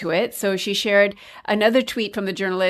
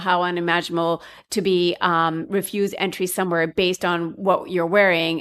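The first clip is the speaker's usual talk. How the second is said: usual speaking voice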